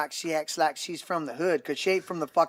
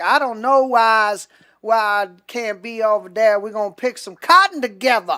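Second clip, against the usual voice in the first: put-on mocking voice, higher and louder; 7 semitones higher, 10 dB louder than usual. Mocking how politicians talk once they get into a community: mocking imitation of pandering politicians. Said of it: "and then they're like".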